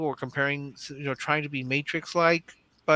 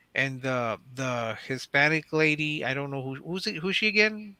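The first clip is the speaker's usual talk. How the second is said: ordinary delivery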